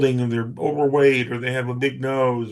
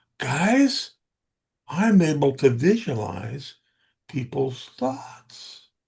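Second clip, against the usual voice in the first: loud stage whisper. Retelling leaning in to share a big secret with the guys, whispering loudly. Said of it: "whisper in a loud voice".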